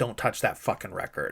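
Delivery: angry, sharp snapping tone. Retelling a film scene where she yells at a guy: imitating a sharp snap. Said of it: "and snaps at this guy".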